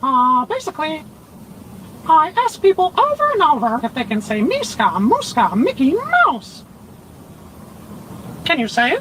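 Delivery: pitch rising way up, swooping and sing-song. Answering a question about his work, in a Mickey Mouse voice. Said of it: "Can I have a conversation with Mickey Mouse?".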